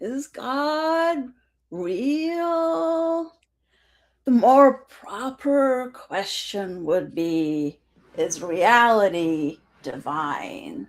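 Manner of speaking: sedated, drugged-sounding, as if tranquilized. Asked in a game to read a quote, as a person just hit by a tranquilizer dart. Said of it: "as a person who just got hit with a tranquilizer dart".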